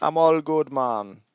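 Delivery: put-on heavy Jamaican accent, very slow and drawn way out. Answering through a magic ring in character: Jamaican accent. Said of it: "a really Jamaican accent".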